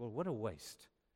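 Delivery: muttered under breath. Retelling what he said to men of great resources: retelling an under-breath remark. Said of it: "probably more under my breath".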